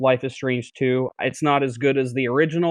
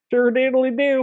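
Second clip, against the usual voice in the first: very high-pitched, fake Southern accent; 11 semitones higher than usual. Joking about breaking the rules while hosting: put-on Southern accent. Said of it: "don't start Southern".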